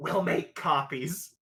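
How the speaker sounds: hushed, whispered delivery. Whispering an aside to a guard character: whispering. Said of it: "I whisper to him".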